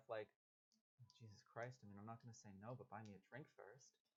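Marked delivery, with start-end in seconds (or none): 1.2-3.9 muttering under the breath, much quieter. Being led by the arm toward the door, muttering under her breath. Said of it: "you just kind of hear like under her breath".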